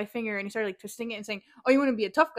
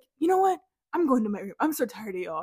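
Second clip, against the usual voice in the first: mock anger, acted getting mad. Retelling what he said before going to his room, imitating him getting mad. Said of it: "He got so mad".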